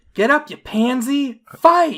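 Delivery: put-on shrill, high, loud, childlike taunting jeer. Narrator voicing a middle schooler jeering at Themis, taunting middle schooler. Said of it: "A middle schooler taunts Themis".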